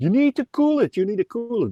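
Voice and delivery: mock very high, repeated yelling and screaming. Retelling how everyone reacted to a boiling-water burn: imitating people screaming. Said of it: "everybody started screaming".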